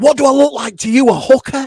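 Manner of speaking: very loud, high-pitched, top-of-the-lungs yell. Retelling a son's reply to a question in a packed restaurant: imitating a child shouting. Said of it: "at the top of his voice, as loud as it".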